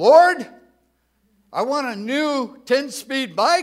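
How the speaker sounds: very loud, high-pitched shouting.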